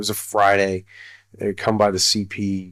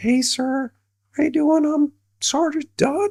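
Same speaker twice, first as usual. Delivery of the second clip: highest possible voice, extremely high-pitched. Speaker retells a soldier introducing himself, imitating Sergeant Dunn's high voice. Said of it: "he's got the highest voice".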